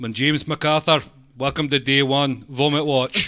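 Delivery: put-on Scottish accent, TV presenter style. Presenting a joke show called Vomit Watch: Scottish presenter voice. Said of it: "why does it have to be presented by a Scottish guy?".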